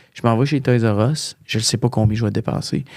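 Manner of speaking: ordinary talk, nothing marked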